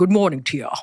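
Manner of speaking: put-on actor voice with Scottish accent. Retelling being greeted on set each morning: Sean Connery voice. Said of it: "That's the voice".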